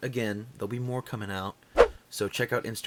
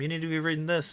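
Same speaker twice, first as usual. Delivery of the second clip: mock, high-pitched, insistent yelling; 7 semitones higher than usual. Retelling how people insist on a comic: imitating people yelling. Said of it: "people yell at me all the time".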